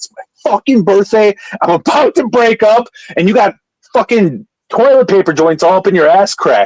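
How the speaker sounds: cold, cutting fury. Retelling what they said on their birthday before a breakup, imitating own angry words. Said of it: "I was so angry".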